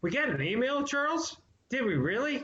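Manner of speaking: overplayed, exaggerated excitement. A podcast host announces an email to co-host charles, making it a big deal. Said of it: "I'm trying to make it a big deal".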